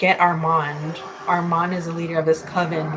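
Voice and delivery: normal talking voice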